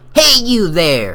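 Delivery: put-on elderly old lady voice. Voicing a character calling out to someone, in an old lady voice. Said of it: "I can't make an old lady voice".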